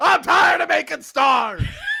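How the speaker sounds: fed-up, exasperated rant, shouted high and loud.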